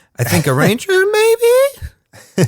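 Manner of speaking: very high, squeaky, swooping sing-song voice. Speaker repeats their own earlier words, mimicking own high voice. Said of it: "Why did my voice get so high there?".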